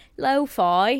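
lo-fi said in put-on cockney accent. Echoing a british word, put-on cockney accent on lo-fi. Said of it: "You've got a little bit of a Cockney accent happening".

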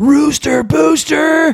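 very high, shrill, full-throated top-of-lungs scream. A husband retells his wife ordering a drink: retelling a top-of-lungs scream. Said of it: "screams it at the top of her lungs".

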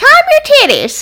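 put-on chirpy, excited country accent, pitched very high. Imitating a former coworker from the country: imitating Amber. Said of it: "she used to say".

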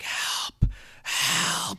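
audible, called-out stage whisper. Retelling a woman calling for help into the radio: stage whisper. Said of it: "She's like stage whispering into the thing".

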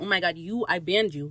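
put-on angry character voice. Retelling a scene where Spanish Jackie finds someone in her bar: imitating Spanish Jackie angry. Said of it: "she's even more pissed".

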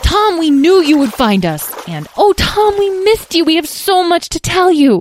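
very high, loud shouting. Narrating two companions greeting the boy they had missed, shouting. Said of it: "began shouting".

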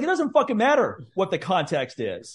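mock mad, angry, swooping cursing outburst. Retelling an angry reply to a neighbor: retelling own angry reply. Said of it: "I got so mad when she said that".

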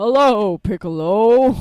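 loud, hammy, fake anime dub voice. Asking someone to do a Kami voice, then trying it: Kami voice. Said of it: "Could someone just do a Kami voice?".

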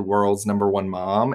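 plain

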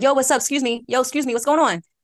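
casual Philadelphia accent. Showing how they can't casually greet someone, in a Philly accent. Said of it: "my Philly accent can come out".

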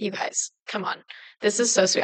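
put-on breathy, teary, choked-up near-whisper. Retelling thanking friends for surprise gifts: retelling own tearful words. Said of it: "I was, like, in tears".

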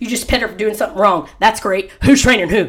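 quick, thick, cutting sarcastic tone. Retelling what a lady said while petting the dog, mock-sarcastic lady's remark. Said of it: "Like she was just real sarcastic".

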